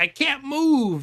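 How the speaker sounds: very high, loud, mocking, sarcastic whine. Acting out how he makes fun of you and your siblings over games, imitating someone being sarcastic. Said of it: "like sarcastically".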